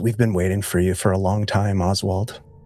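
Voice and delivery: very low, gentle, tender, almost loving voice. As life fades, a voice speaks to Oswald: gentle, almost loving voice. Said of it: "a very gentle and almost loving voice".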